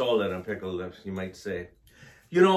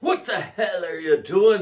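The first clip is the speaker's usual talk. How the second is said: yelling, higher and louder. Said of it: "The dancer yells at him".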